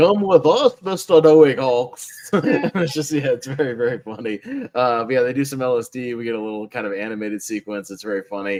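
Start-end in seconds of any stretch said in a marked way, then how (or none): 0.0-2.1 put-on loud, drawled, silly Liverpool accent. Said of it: "his accent was terrible".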